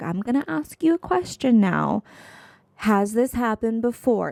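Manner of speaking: condescending, patronizing, talking-down tone. Retelling what a mechanic asked her: imitating a condescending tone. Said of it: "he is so condescending of a tone".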